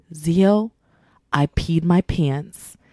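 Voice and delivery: slow, hushed half-whisper, spoken close. Retelling how a friend pulled close to say it: imitating a friend half-whispering. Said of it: "whispers in my ear and she says".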